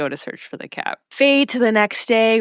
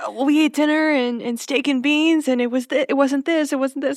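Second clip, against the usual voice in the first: stammering, with restarts and repeated words; 6 semitones higher than usual. Retelling Dean explaining dinner when asked: imitating Dean stuttering. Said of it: "they're both stuttering".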